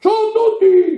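high, cracking voice.

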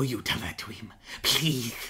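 lisping Spanish accent, put-on. Retelling a movie trailer line, imitating Salazar's lisping Spanish accent. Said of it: "in the trailer when he's like".

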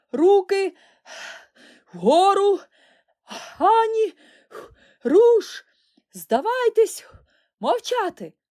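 very high, very loud bellow, panting each word. Narrator voices the chieftain emerging from the bushes, bellowing, panting every word. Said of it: "відсапуючись на кожному слові, загорлав отаман".

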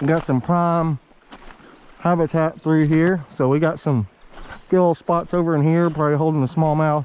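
muffled speech through a full, chewing mouth. Snacking on jerky while fishing, the angler keeps talking with mouth full. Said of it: "I got some jerky in my mouth".

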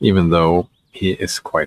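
ordinary delivery

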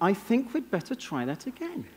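polite, understated, soft put-on English accent. Speaker shows the audience a line to try in their organizations, in an English accent. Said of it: "Say it in an English accent".

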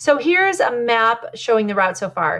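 ordinary talk

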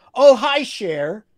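overly chummy, way-too-loud friendly voice, very high. Retelling greeting someone after they startled each other; retelling a way-too-loud greeting. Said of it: "in way too loud a voice".

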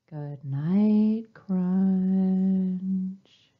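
calm, soothing, stretched-out, lulling voice. Saying goodnight to a turtle one more time, as instructed: calm and soothing. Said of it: "one more time in a calm and soothing voice".

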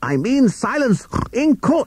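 shrill, very high shout climbing upward. Narrator reads a courtroom story, Justice Pig shouting. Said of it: "shouted Justice Pig".

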